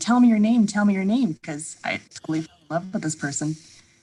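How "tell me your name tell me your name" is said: loud yell, repeated twice. Retelling a dream, calling after someone driving away: imitating own yelling. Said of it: "And I'm yelling at him".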